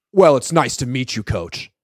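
put-on snarky tone. Retelling what was said to the coach: imitating a snarky remark. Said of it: "in a snarky way".

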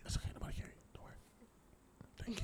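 whispered, hushed, barely voiced. Asking quietly for the tequila to be passed: whispering. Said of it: "you're whispering and we can still hear you".

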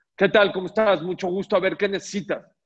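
mock forceful tone. Showing how a customer greets a salesperson: imitating a customer speaking very loudly. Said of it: "te habla muy fuerte".

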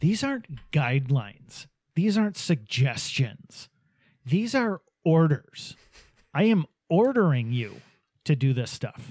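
play-acted condescending, self-satisfied, cocky, smug tone. Ranting about governors on the broadcast, mimicking Gretchen Whitmer's smug tone. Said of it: "in that cocky, fucking smug tone of hers".

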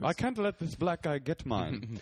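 fake British accent, badly done, high and slow. Imitating a guy who took a Twitter name: bad British accent. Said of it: "that's my British accent".

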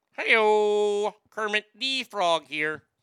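"hey-o" stretched out slowly. Introducing a puppet matchup, announcing the first puppet: Kermit the Frog voice. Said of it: "you guys all thought Kermit was there".

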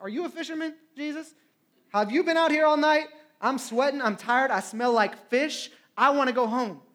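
biting, heavy, sarcastic tone. Retelling the Bible story, acting out Peter answering Jesus: sarcastic Peter impression. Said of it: "I can imagine the sarcasm in his voice".

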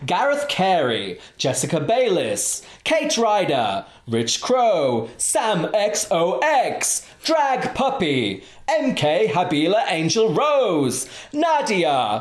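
swooping TV announcer voice. Giving shout-outs to a list of people, X Factor commentary voice. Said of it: "I decided to do it in the X Factor commentary voice".

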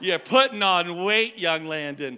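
put-on Maine accent. Act out your grandma greeting you for the first time in years, in a put-on Maine accent. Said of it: "she has this main accent she talks like this".

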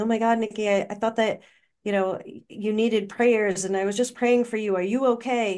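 frantic, panicked, fast, words tumbling out. Retelling a phone call where the mother picked up: imitating a frantic, panicky mother. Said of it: "she was kind of frantic and panicky and saying".

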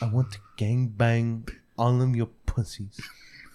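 put-on bad lisp, very slow. Retelling what a man who called in said, with a very bad lisp, very slow. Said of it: "He had a very bad lisp and he spoke very slow".

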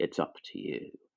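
put-on hushed, breathy, terrible New Orleans accent. Imitate the final shot of JFK, speaking to camera in Kevin Costner's terrible New Orleans accent. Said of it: "he says it in a terrible New Orleans accent".

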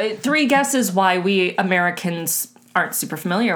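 normal talking voice

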